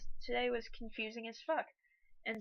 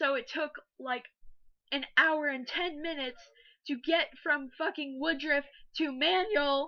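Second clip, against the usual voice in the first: loud, fed-up, irritated rant, voice cracking; 3 semitones higher, 6 dB louder than usual. Complaining about a long ride back to school, voice cracking, irritated. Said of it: "My voice is cracking".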